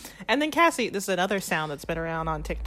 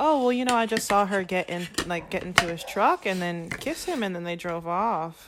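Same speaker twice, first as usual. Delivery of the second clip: ordinary talk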